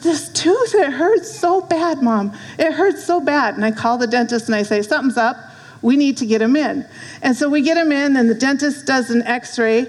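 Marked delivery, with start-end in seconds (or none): 0.0-3.5 high, drawn-out put-on pained crying, words stretched. A mother acts out what her child said to her, imitating a child crying in pain. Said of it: "and he's crying".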